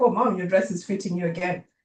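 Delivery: ordinary delivery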